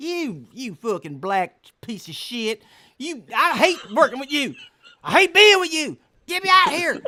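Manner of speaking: very high, loud, swooping puppet-voice tirade. Retelling a street act with an insulting ventriloquist puppet: ventriloquist puppet voice. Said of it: "the puppet's put me down like".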